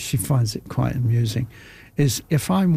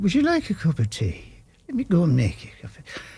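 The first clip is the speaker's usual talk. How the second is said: stupid put-on Irish accent, high and sing-song; 5 semitones higher than usual. Back from Ireland, reenacting a break while watching the show, in an Irish accent. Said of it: "I'll have this Irish thing in my head".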